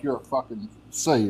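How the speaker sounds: hostile, angry, confrontational, ready to fight. Showing how the word sounds when said angry: angry insult. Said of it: "if we say it angry".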